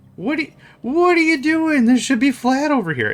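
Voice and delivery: very high, breaking voice with voice crack. Voicing a worker who wants the ground flat: cracking voice. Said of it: "The voice has to crack".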